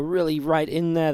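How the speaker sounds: normal talking voice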